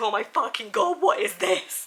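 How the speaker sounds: loud, far-carrying mock horror and shock.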